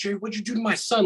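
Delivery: very high, mock outraged, furious shriek. Retelling how the mother screamed at the father: imitating mom screaming. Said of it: "she just screams at my father".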